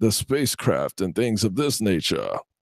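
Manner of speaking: put-on wild baritone Southern drawl. Imitating a man heard on Coast to Coast: imitating crazy baritone Southern voice. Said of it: "this crazy, like, baritone, like, Southern voice".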